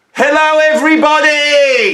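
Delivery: all-out, shrill, very high shout. Greeting viewers at the start of a channel video: shouting. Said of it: "I'm shouting again".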